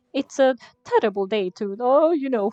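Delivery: loud, belted cartoon Italian accent. Retelling how they voiced one of the characters, in a Mario accent. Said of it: "I gave one of the characters before a Mario accident accent".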